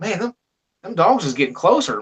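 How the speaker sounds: ordinary delivery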